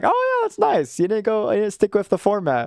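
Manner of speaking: animated, pleasant surprise with a high, swooping pitch. Acting out own predicted reaction to a topic choice: imitating own surprised tone.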